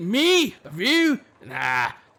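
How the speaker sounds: heated, loud, swooping, very drawn-out retort. Narrating a story where the blacksmith answers a visitor, with a hot reply. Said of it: "the blacksmith replies hotly".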